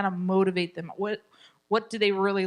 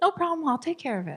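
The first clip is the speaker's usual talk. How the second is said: kind, empathetic, loving, pitched-up reassuring tone; 9 semitones higher than usual. Showing a parent how to answer their child, loving, empathetic tone. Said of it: "loving, empathetic".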